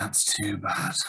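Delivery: disappointed falling tone. Teaching intonation, the speaker plays Mr. Smith reacting, disappointed falling tone.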